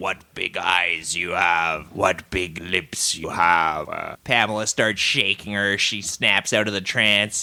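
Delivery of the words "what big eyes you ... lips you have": voice dropped deep and low. Retelling what a woman in a trance said, in a Big Bad Wolf voice. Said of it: "speaking with the same pipes voice from earlier, doing a doing a big bad wolf thing".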